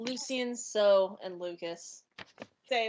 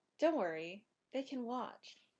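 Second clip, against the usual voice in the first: quiet, confidential half-whisper; 8 dB quieter than usual. Voicing a character pulling another aside and speaking privately: half-whispering. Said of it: "I whisper this only to Lucien".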